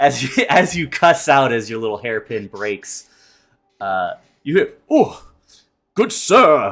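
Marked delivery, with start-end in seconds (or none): 4.9-6.7 very high, grand, courtly regal knight voice. Game narrator voicing whoever greets the player as the hairpin breaks, regal knightly voice. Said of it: "a very regal, dare I say, knightly voice".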